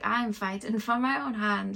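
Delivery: put-on slight, light touch of Irish accent. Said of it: "like in a little Irish accent".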